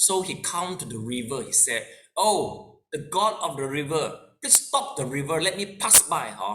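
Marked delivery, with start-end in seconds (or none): 2.2-6.3 acted, very arrogant, haughty, lordly tone. Retelling a story where an Arahant calls to the river god: imitating an arrogant tone. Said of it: "With a very arrogant accent".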